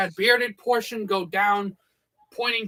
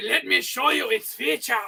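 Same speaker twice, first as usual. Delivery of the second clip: bad, horrible, fake, put-on German accent; 3 semitones higher than usual. Show off a poleaxe as Slingshot Channel would, in a horrible German accent. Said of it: "Und mein horrible German accent".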